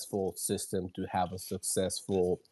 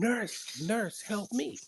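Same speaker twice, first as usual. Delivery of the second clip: put-on shrill, very high-pitched scream; 14 semitones higher than usual. Nurse recalls a patient who kept calling out: retelling a patient's screaming. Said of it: "he kept screaming".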